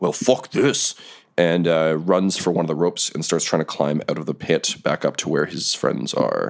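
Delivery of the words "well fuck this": rough, gruff bugbear voice, pitched up. Narrating a bugbear in a pit as it quits and runs: gruff bugbear voice. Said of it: "in gruff comment".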